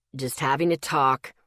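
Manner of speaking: grumpy. Narrator reads a man's reply, shot over his shoulder, grumpy. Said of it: "His voice was grumpier than usual".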